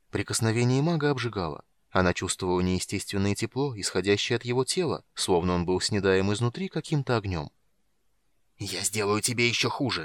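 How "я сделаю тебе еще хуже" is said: hissing delivery. A mage gripping a woman's hands threatens her, hissing. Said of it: "прошипел Рейслин".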